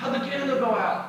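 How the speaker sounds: very high-pitched, shrill, loud yell. Retelling a question from the back of the room: imitating someone yelling. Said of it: "someone from the back in the corner yelled".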